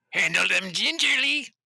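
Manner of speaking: high-pitched put-on goblin voice. Speaker voices a goblin character to the others: goblin voice. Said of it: "That was my goblin voice".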